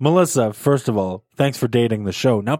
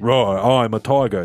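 put-on very British accent, lower; 5 semitones lower than usual. Recalling stuffed toys that roar and talk: imitating a toy's very British voice. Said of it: "in a very British voice say".

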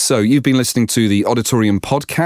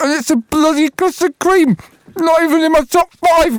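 half-choking while eating, much higher; 4 dB louder than usual. Podcast presenter signs off while eating a biscuit, choking on a biscuit. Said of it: "I'm choking to death".

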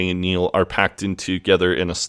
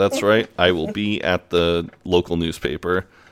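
plain

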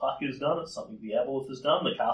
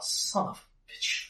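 muttered under her breath, higher pitch; 7 semitones higher, 3 dB quieter than usual. Playing a character who senses an enemy mind: swearing under her breath. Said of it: "swears under her breath in Ulfin".

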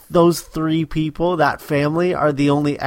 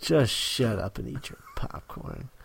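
scolding tone, pure disgust, swooping pitch; 4 semitones lower, 11 dB quieter than usual. Quoting the parents in a show scolding their kid: imitating a disgusted parent. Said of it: "they both say it with such disgust".

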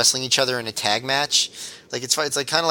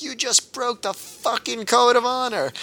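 acted-out scream, pitched much higher; 11 semitones higher than usual. Recounting how one person screamed at another, retelling a scream. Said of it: "Quiet Storm literally screamed at him".

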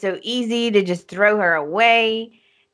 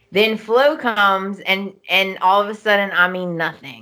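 ordinary talk, nothing marked

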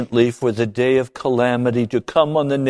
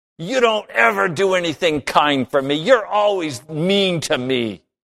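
put-on high, bitter, angry sulky-child voice; 6 semitones higher than usual. Acting out a child after mom says no at McDonald's, imitating an angry, bitter child. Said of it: "all of the anger returns. All of the bitterness".

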